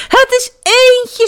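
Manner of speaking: very high, loud shout. Friends nearly home see lights in the old house and cry out together: shouting. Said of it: "schreeuwden ze".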